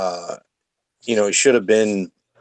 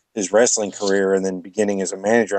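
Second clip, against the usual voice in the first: ordinary delivery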